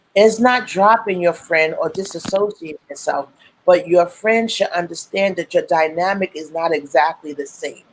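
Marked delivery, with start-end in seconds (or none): none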